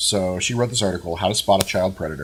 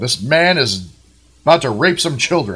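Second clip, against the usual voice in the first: put-on loud announcer voice, higher and louder; 4 semitones higher, 6 dB louder than usual. Retelling what a woman in an article told a lady: imitating someone speaking very loudly. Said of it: "told the lady in the loudest voice I could".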